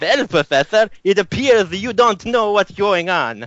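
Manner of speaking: put-on Italian accent. Telling a story, a strange voice speaks to the professor in Mario voice.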